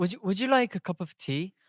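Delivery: attempted English accent. Asked to try an English accent, the speaker attempts it: English accent. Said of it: "can you do the English accent".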